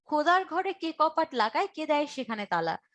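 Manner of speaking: ordinary talk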